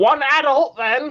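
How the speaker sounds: high-pitched goblin voice. Game master voicing a ticket-booth goblin greeting the first player in line, unnecessarily high, elevated goblin voice. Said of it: "in an unnecessarily high, elevated voice".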